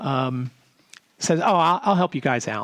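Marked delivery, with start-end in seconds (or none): 1.4-2.7 heavy Southern drawl, laid on thick. Retelling a man from the south offering to help, in a heavy southern drawl. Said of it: "and a really heavy Southern drawl".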